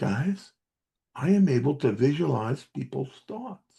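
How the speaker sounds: loud secretive stage whisper, acted out. Speaker acts out confiding in the guys around him: loud secretive whisper. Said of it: "whisper in a loud voice like it's the biggest secret".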